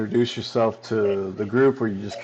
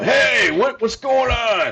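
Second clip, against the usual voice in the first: abrupt, sudden yell, very high-pitched; 12 semitones higher, 3 dB louder than usual. Retelling what a guy suddenly yelled out, retelling a sudden yell. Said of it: "all of a sudden he yells out".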